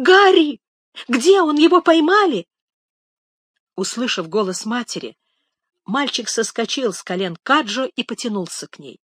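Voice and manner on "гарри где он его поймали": very loud, high crying out. Reading a story, a mother rises from her bed calling for her son: crying out. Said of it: "крикнула".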